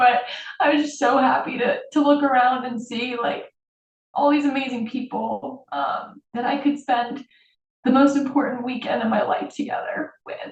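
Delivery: crying, high, tearful voice cracking and breaking. Speaker recalling the most important weekend of their life, crying. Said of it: "I don't know why I'm crying".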